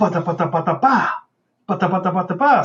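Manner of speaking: rhythmic, vocalized slot-machine-like cadence.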